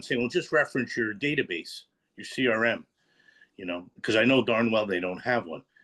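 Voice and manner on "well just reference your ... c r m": play-acted, pointedly sarcastic tone. Retelling what is said to people in the office: retelling own sarcastic remark. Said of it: "I do it somewhat sarcastically".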